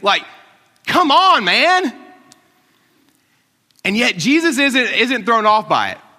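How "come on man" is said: mock snarky, sarcastic tone, higher and louder. Retelling how the disciples answered Jesus in the crowd: imitating a snarky, sarcastic reply. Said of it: "little snarky, sarcastic reply".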